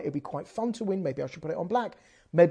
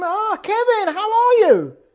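shrill, booming, very loud, high, drawn-out scream; 11 dB louder than usual. Retelling greeting Kevin and his wife in the car park: retelling own scream. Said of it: "and I just scream".

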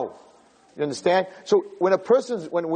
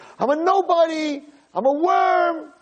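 put-on very slow, very high scream, "worm" stretched out; 10 semitones higher than usual. Retelling a joke about a man in shul: imitating someone screaming. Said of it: "he sees this guy screaming".

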